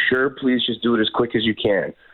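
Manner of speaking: ordinary talk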